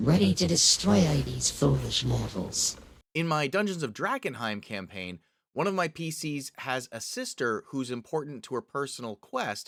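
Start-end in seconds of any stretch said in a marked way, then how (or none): 0.0-2.8 loud, rasping, sinister, rough-edged evil sorceress voice. Demonstrating a voice for an evil sorceress the players face, evil sorceress voice. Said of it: "use this runic sorceress".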